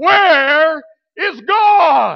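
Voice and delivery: very loud, booming, high shout, "God" drawn out. Telling a story, the speaker repeats the preacher's question to the boy in a louder voice. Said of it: "even with a louder voice".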